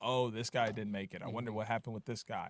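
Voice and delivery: ordinary talk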